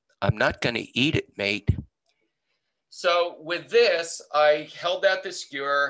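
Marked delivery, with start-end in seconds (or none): 0.2-1.7 put-on whisper, pitched lower. Retelling what someone whispered from behind during a show: Russell Crowe whispering. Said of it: "he whispers to me and he says".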